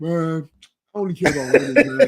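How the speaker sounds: low, put-on baritone voice. Retelling what a man said when asked about the MVP, in a put-on deep voice. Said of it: "He got a deep voice".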